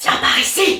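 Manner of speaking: artificial, loud, projected stage whisper. Showing how people whisper loudly when told to whisper: loud whisper. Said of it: "ça, c'est chuchoter fort, c'est artificiel".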